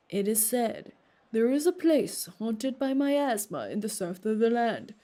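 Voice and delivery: grand, lofty, majestic storyteller narration voice. Reading a story's narration aloud; majestic storyteller voice. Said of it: "I was trying to go for a majestic storyteller".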